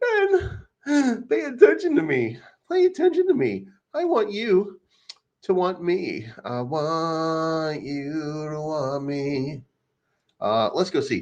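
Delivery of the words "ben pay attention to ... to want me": mock, high blubbering through tears. Acting out a crying man's plea in a video: imitating someone crying. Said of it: "he's crying".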